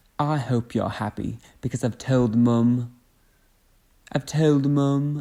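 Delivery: slow, put-on, attempted Irish accent. Speaker tries out an accent they are normally better at, in an attempted accent. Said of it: "I'm normally better at that accent".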